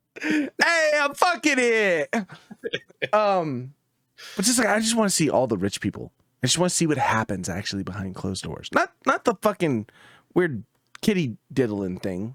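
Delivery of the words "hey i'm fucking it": put-on Brooklyn accent, very high, slow and drawn out. Riffing on a movie joke with another speaker, the speaker delivers it in a Brooklyn accent. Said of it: "Or with a Brooklyn accent".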